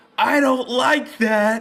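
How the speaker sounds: high, loud, slow yelling.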